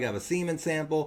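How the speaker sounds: plain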